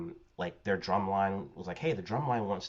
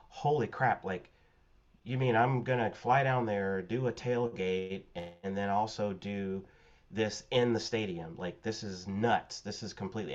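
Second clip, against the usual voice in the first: ordinary talk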